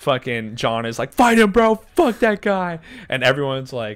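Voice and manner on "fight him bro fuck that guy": mock yell, higher and louder. Retelling how a bandmate egged on a fight: imitating someone yelling. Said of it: "everyone's, like, yelling at us".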